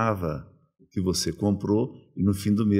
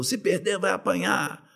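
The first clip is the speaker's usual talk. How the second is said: put-on, shrill, very high shouted drunken yell; 10 semitones higher than usual. Retelling a drunk fan charging at him: imitating a drunk fan shouting a threat. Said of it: "partiu pra cima de mim e gritou".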